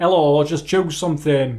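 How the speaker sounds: put-on Yorkshire accent. Re-quoting what a woman told him, in a yorkshire accent impression. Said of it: "That was Yorkshire".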